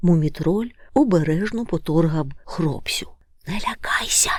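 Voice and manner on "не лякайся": hushed, soft, breathy, comforting whisper. The young troll carefully nudges a sleeper awake, whispering. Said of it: "зашепотів він".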